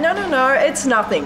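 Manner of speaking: ordinary talk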